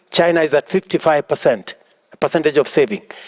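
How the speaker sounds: ordinary talk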